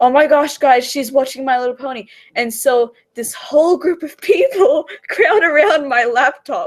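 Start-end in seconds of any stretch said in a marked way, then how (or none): 0.0-2.1 loud, high, fast put-on call. Recalling a popular girl shouting to the guys in the other room; imitating someone shouting. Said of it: "goes to the guys at the other room and shouts".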